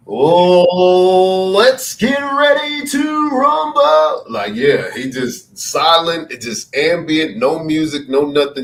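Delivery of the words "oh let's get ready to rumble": way-up-high boxing ring announcer voice. Planning a joke award video, imitating a ring announcer. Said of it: "this is like the ring announcer".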